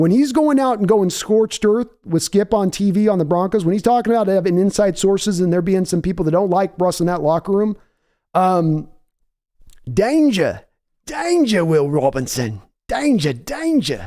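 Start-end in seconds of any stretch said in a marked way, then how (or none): 9.9-14.1 put-on Australian accent. Joking mid-rant, imitating the Crocodile Hunter. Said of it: "I was trying to do the crocodile hunter".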